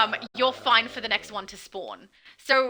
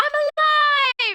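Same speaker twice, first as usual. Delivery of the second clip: shrill, very high, loud yell; 7 dB louder than usual. Wondering whether a character loses her accent, quoting her line: imitating Voivode yelling. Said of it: "Like when she's yelling".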